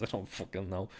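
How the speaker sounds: normal talking voice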